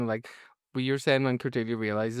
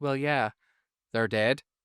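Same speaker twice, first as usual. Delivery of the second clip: put-on Northern Irish accent. Retelling a TV scene to David, in Harmony's Northern Irish accent. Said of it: "delivered in a Northern Irish accent".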